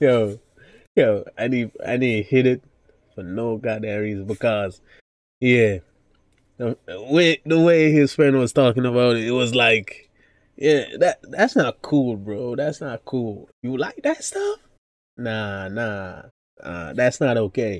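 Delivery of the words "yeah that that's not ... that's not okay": mock preachy lecturing voice, swooping and disapproving. Retelling how a friend talked about it: imitating a disapproving friend. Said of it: "That's basically the vibe he was giving off".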